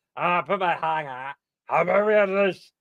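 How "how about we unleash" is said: put-on demented voice, pitched higher. Testing a voice again with a hand on the throat: demented Pee-wee Herman voice. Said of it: "like a demented, um, uh, Pee-wee".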